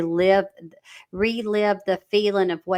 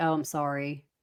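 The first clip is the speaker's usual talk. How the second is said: play-acted low, dead-level, toneless monotone; 5 semitones lower, 7 dB quieter than usual. Acting out how someone says sorry, in a flat monotone. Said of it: "very just, like, monotone. It's just like".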